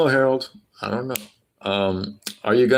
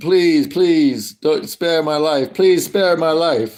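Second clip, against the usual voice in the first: speaking with a Serbian accent; 6 semitones higher, 4 dB louder than usual. Answering a request to play a Serb begging for their life: put-on Serbian accent, mock pleading. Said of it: "Can you do a Serb impression lying dead on the floor".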